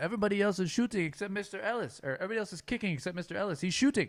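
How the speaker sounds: put-on heavy Polish accent, very high and loud. Retelling what a coach said on the first day: imitating a thick Polish accent. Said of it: "thick, like, uh, Polish kinda accent".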